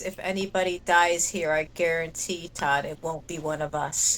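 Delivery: deep hushed voice, very low and quiet. A player's character addresses another character in a tabletop game, in a very low voice. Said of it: "I say in a very low voice".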